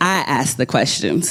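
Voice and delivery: ordinary talk, nothing marked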